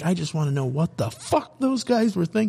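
high, put-on angry yelling. Recounting how a man yelled at them over something they didn't do, retelling a yell. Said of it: "he started yelling at us".

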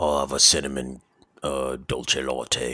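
put-on English accent of Britain. Retelling a person's coffee order in a story; British accent. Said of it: "you said that the first two were British".

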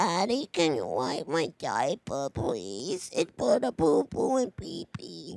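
put-on baby voice, low and swooping. Joking with the other speaker, talking like a toddler: put-on baby voice. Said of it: "You think I'm going into baby voice territory".

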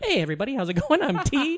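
crisp stand-up comic voice, a little high. Retelling a friend playing Mister T doing stand-up: very crisp Mister T stand-up voice. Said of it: "he's very crisp".

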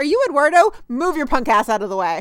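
dead serious, stern, all-business cop tone. Retelling a police raid scene, imitating Atwater, serious and all business. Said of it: "the minute Atwater gets all serious and all business".

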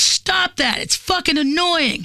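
mock, high-pitched screamed outburst. Retelling an argument while driving, imitating someone screaming. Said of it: "he screamed at me".

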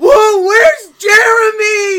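put-on very loud, high, drunken young college-kid voice. Retelling what an intruder said: imitating a wasted college kid. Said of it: "college kid, wasted".

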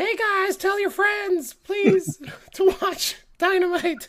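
very high character voice. Quoting a wrestling promoter's tweet asking fans to watch: Tony Khan impression. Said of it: "That's my Tony Khan impression".

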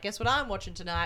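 ordinary delivery

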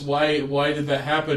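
ordinary delivery

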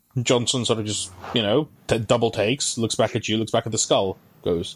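normal talking voice

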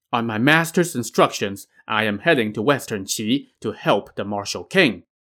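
plain reading voice

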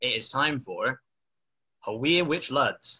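accent from Sunderland. Host introducing the last game while the Sunderland supporter is absent, attempting a Sunderland accent. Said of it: "attempt the accent for my introduction".

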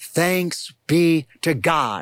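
very slow, drawn-out, reverent delivery.

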